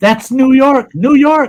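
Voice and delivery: high, loud excited yelling. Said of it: "he starts yelling".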